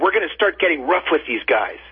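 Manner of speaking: ordinary talk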